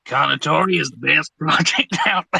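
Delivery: best-attempt put-on American accent. Answering a viewer's request to say the line, in best American accent. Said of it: "in your best American accent?".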